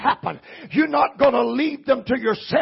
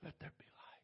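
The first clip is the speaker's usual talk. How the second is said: put-on whisper, lower and quieter; 9 semitones lower, 37 dB quieter than usual. Quoting God speaking at creation, acting out a whisper. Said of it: "He whispers".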